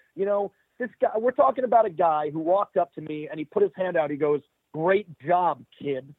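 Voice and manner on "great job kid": arrogant, condescending, dripping with sarcasm. Recounting a man who walked up with his hand out, mocking his sarcastic tone. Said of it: "The sarcasm was dripping out of his mouth".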